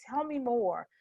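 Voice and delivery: relaxed, calm, open, inviting tone. Showing how a calm tone invites more engagement: calm open tone. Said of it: "that tone, the".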